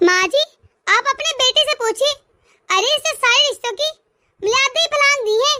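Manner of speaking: heated, angry, urgent tone. Daughter-in-law calls her mother-in-law to the kitchen over her son, shouting. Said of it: "ये इतना गला फाड़ कर क्यों बोल रही है?".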